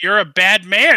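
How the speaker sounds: shrill, very loud, all-out yelling. In a game, a character runs from a figure with a bloody sledgehammer: yelling. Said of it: "just yelling".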